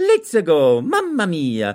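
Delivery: high, swooping, sing-song Italian accent. Voice actor recalling the audition for an Italian plumber from Brooklyn: Mario voice. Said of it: "Italian plumber from Brooklyn".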